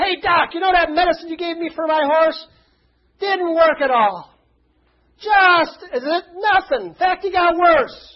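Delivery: loud, booming call. Retelling a man calling across a restaurant to the doctor, in a booming voice. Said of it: "in a booming voice".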